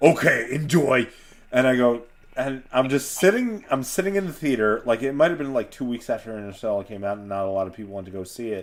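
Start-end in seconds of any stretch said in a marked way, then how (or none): 0.0-1.1 put-on thick, heavy Greek accent. Retelling the dad's reply before going to the movies, thick Greek accent. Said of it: "so with his thick accent".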